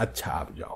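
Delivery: very soft, hushed whisper.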